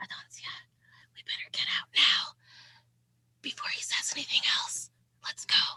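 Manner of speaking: soft whisper in character voice. Whispering in character to Adoncia so Ernesto can't hear: whispering in character. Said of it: "can I whisper to Adoncia".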